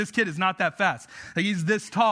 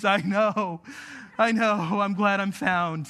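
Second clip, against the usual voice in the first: put-on very slow tearful sobbing, crying through tears. A pastor retells finding a lost family member, imitating Asher crying. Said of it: "through his tears, he goes".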